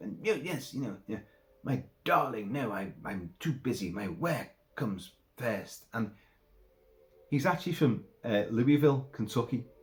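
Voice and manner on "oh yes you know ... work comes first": put-on starched, stilted, wooden British accent. Retelling a movie character's lines: imitating a stilted, wooden British accent. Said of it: "starched, stilted, hugely wooden British accent".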